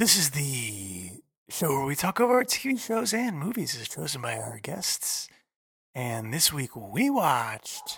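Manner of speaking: put-on sexy host voice, "the" drawn out. Podcast host introducing the week's episode: sexy voice. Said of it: "I should be doing my sexy voice".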